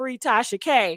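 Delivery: ordinary talk, nothing marked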